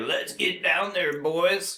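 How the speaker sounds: mock giddy, high, eager excited voice. Describing Hudson as the transporter ship goes down to the surface, imitating his giddy excitement. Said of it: "is just giddy with excitement".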